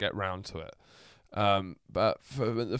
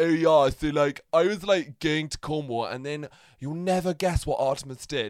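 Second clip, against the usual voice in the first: high-pitched, airheaded, dim-witted upper-class posh voice; 5 semitones higher, 4 dB louder than usual. Explaining how different posh people sound, demonstrating a dumb posh accent. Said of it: "if you're like a dumb posh person, that's when you sound like".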